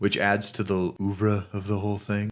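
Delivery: flat, pompous, affected voice.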